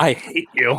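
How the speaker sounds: intimate stage half-whisper. Looking another character dead in the eyes while being pushed: half-whispering. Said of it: "I look him dead in the eyes and whisper".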